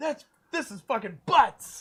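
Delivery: loud, upset yell. Retelling what he yelled after rolling a one: imitating someone yelling. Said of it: "he just yelled out".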